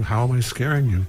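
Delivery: plain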